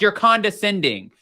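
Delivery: ordinary talk, nothing marked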